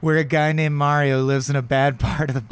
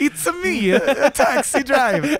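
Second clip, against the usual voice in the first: put-on Italian accent pitched way up, drawn out; 11 semitones higher than usual. Joking that the movie is Mario as Taxi Driver: Mario voice, Italian accent. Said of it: "I'm losing my Italian accent".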